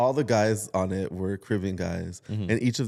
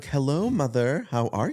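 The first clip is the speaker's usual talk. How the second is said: put-on mock-formal tone, pitched much higher; 5 semitones higher than usual. Describing how families talk, imitating formal speech to a mother.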